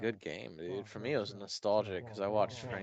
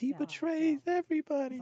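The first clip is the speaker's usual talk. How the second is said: put-on shrill, very high, loud little-kid sobbing; 6 dB louder than usual. Retelling a famous quote from a video: imitating a crying kid. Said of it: "there's this little kid that's crying".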